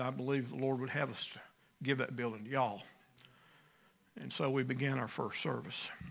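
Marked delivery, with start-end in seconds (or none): 0.0-2.8 soft, fast, hurried nervous voice. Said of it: "very nervously and said".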